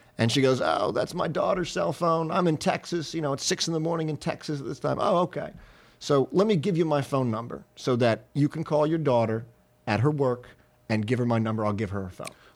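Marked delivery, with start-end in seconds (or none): 0.6-5.0 worn-out, tired woman's voice. Retelling a phone call answered in texas at 6 a.m., imitating a tired woman. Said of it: "this lady's tired voice answers the phone".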